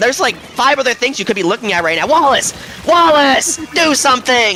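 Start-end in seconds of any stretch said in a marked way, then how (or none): 2.1-4.6 high, loud, aggressive yelling. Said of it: "Sorry, I'm a little aggressive".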